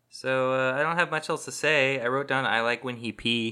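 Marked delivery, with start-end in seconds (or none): none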